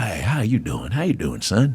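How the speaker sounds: light, soft, swooping Texas twang and drawl. Retelling meeting Dan Rather, who greets him back: imitating Dan Rather's twang. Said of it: "'cause he has a little twang".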